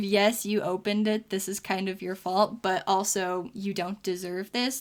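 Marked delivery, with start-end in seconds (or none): none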